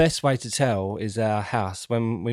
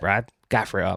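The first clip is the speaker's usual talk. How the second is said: imitated thick West Country accent. Recalling what a theatre manager used to say about gaffer tape, imitating a strong West Country accent. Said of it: "he had a strong West Country accent".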